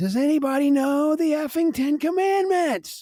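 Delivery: play-acted, very high, shrill, drunken screaming. Telling of a drunk woman outside the bathroom, imitating a drunk yell. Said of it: "yelling out loud".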